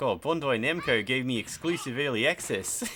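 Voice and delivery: goofy, silly fake New Zealand accent. A speaker acts out answering people who ask about early access, in a silly put-on accent. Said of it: "I make myself laugh when I do that accent".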